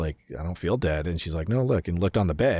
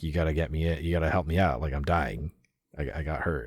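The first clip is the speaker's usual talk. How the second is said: begging, pleading tone. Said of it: "asking and begging her".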